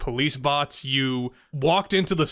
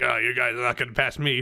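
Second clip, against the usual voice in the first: hard-nosed, tough-guy officer voice; 3 semitones lower than usual. Retelling a border guard blocking the group, imitating a tough guard. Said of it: "real tough".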